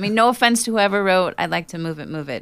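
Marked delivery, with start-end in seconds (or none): none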